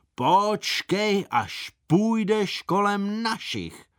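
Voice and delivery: very high, drawn-out shout. A pursuer shouts after the fleeing narrator: shouted. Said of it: "Leopold Ješina za mnou křičel".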